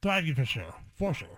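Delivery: speaking while chewing, mouth full. On a podcast, answering a question while eating a cracker, talking with mouth full. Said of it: "What are you eating".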